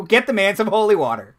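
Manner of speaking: loud, high-pitched yell. Narrating a man who yells at the acolyte from around the corner, yelling. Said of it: "he just yells at the acolyte".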